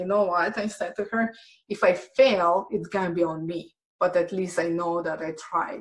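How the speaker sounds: ordinary delivery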